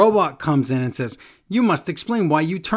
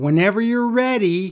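loud yelling, pitched up; 6 semitones higher than usual. Retelling a match, imitating Liv Morgan yelling. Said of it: "And then she yells".

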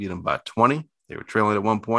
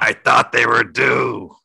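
loud, creaky, crusty cartoon croak; 2 semitones higher, 7 dB louder than usual. Making a betting pick, quoting a Simpsons bettor who backed the Generals, crusty voice from The Simpsons. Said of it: "my best crusty voice from The Simpsons".

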